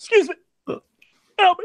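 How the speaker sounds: mock choking voice. Retelling a clip of someone choking on air: imitating someone choking. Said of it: "the noises he's making when he's choking".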